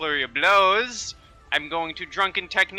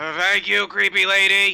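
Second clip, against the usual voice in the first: put-on drunken shout; 3 semitones higher, 4 dB louder than usual. Playing a drunk character in a fight, calling out: drunken shout. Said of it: "I just kinda drunkenly shout out".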